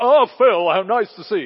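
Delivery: delightfully loud, high booming voice.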